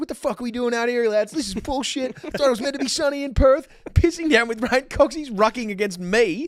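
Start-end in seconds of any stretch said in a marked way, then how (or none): 0.0-4.8 put-on higher-pitched American accent. Recall a hilarious game by acting out what he said to the boys, in Cox's American accent. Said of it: "in his American accent".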